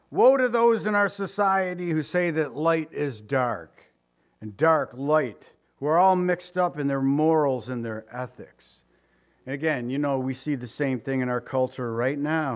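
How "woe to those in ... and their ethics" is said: plain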